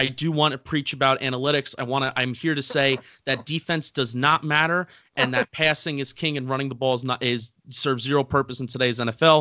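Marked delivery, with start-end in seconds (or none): none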